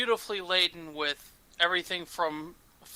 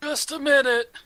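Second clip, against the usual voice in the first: put-on almost decrepitly old voice, pitched high; 9 semitones higher, 4 dB louder than usual. Narrating a scene, voicing someone behind a door answering a knock, decrepitly old voice. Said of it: "in a almost decrepitly old voice say".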